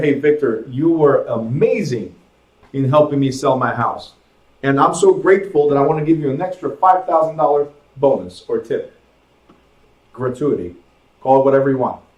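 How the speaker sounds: ordinary talk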